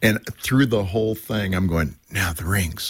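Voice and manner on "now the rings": put-on under-the-breath mutter. Recalling their own wedding, the speaker retells muttering under their breath. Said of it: "under my breath".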